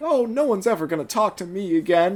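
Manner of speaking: light, high fake posh accent. Describing Sunshine's default voice, the speaker imitates it: Sunshine's received-pronunciation voice. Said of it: "He has that received pronunciation".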